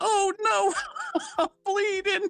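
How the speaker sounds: put-on very high, very slow elderly woman voice. Retelling a movie scene where an old lady slipped: imitating an old lady. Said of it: "And she goes".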